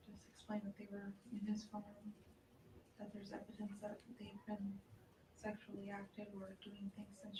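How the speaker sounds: very quiet, sheepish. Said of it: "You can barely hear her, talking like a child that's in trouble".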